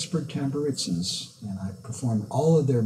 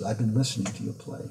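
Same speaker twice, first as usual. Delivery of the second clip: put-on humble, soft-spoken voice, quieter; 3 semitones lower, 4 dB quieter than usual. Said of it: "in a very humble voice".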